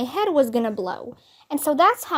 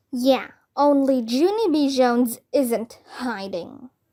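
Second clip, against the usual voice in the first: slow, menacing, spooky scary voice. Girl hiding from people looking for her, answering in a scary voice. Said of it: "I said in a scary voice".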